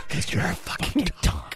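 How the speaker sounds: quiet, breathy whisper, just under the breath. Retelling a sketch line the owner whispers to his dog: imitating Will Ferrell whispering. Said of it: "he just whispers".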